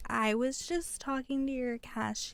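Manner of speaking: slow, overly polite, nicey-nice professional voice. Describing how people talk once a manager comes up, in a mock nicey-nice professional tone. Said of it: "talking all, nicey nice and like really professionally".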